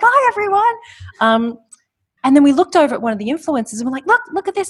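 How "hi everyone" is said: put-on excitement, much higher, louder. Retelling waving out a car window at people with flags, acting out an excited greeting. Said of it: "just so excited".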